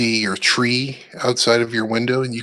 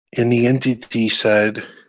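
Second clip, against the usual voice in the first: usual speaking voice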